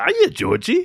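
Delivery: eerie clown voice. Quoting a horror film villain after another speaker does: Pennywise voice. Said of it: "so good".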